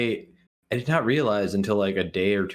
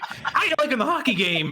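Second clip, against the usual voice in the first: very high-pitched grandma voice. Voicing a tentacle monster going up to kids at a hockey game, sounding like Grammy. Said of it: "You sounded like Grammy".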